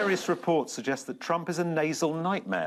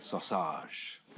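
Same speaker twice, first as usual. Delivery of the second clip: put-on French accent; 12 semitones lower, 7 dB quieter than usual. Brainstorming names for a fragrance, offering one in a French accent. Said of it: "Did you say sausage in a French accent? / yeah".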